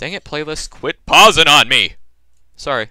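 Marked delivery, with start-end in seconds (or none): 0.7-1.9 sudden, very loud outburst, full yelling. Scolding a playlist that keeps pausing, loud outburst. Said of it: "That was loud".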